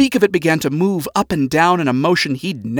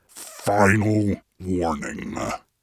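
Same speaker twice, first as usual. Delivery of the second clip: very low, hushed demonic growl; 7 semitones lower, 6 dB quieter than usual. Narrating a novel, read Lucifer's line to Lilith's clone, growled. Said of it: "he growled in a voice that he hadn't put to use".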